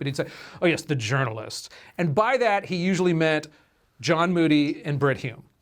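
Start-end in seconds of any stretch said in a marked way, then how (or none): 0.6-1.7 low, lowered voice, like an aside. Retelling how Roger would say a word about journalists: imitating Roger's lowered voice. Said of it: "he'd lower his voice and do".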